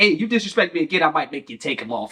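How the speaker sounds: mock deadpan dead serious tone. Retelling what a player says while talking trash: imitating a dead serious threat. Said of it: "dead serious".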